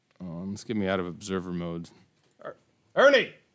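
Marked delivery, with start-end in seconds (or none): 2.5-3.3 very high, very loud yell. Yelling at the dog away from the game: yelling at the dog. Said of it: "Sorry for the yelling".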